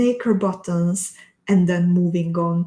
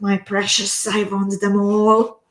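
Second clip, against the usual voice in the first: greedy monster-like voice. Reading out a comment from Corinne, in a Gollum voice. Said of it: "with like a Gollum, Gollum type".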